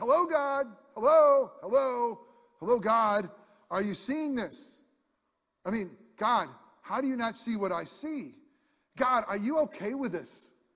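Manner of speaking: put-on prophet voice crying out. Retelling how Habakkuk cried out to God: acting out Habakkuk crying out to God. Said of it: "he was crying out to God".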